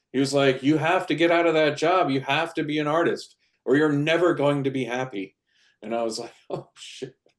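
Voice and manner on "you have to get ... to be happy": play-acted frantic, urgent pleading, high-pitched. Retelling a man's answering-machine message to the speaker, imitating a panicked voice. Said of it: "he was like a panicked kind of voice".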